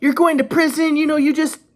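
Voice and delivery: put-on shrill, very high, contemptuous yelling. Retelling what mom yelled during arrival in the police car: imitating mom yelling. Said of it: "she's yelling".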